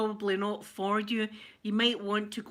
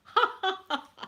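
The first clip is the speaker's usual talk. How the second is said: put-on, very high, fake belly laugh; 10 semitones higher than usual. Showing how much laughing is coming today: fake belly laugh. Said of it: "I'm gonna be laughing my head off".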